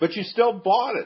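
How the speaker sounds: high, loud, whiny complaining tone.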